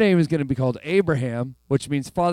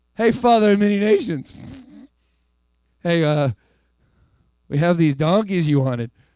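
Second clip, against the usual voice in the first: put-on snide, taunting, sarcastic, mocking tone. Imagining how people spoke sarcastically to him: imitating a sarcastic taunt. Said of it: "some people said it sarcastically to him".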